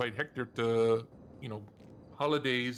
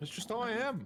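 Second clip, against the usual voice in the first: very loud, shrill, high excited talk; 11 semitones higher than usual. Answering another speaker who asks if they are shouting: very loud. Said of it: "You're very loud".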